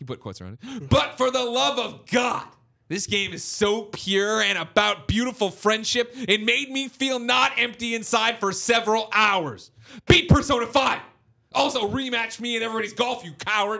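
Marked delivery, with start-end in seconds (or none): 0.9-13.8 very high, put-on, fake furious voice. Reading a producer's all-caps question aloud: put-on angry voice. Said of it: "In angry [name] voice".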